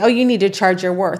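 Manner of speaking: ordinary talk, nothing marked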